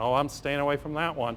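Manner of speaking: plain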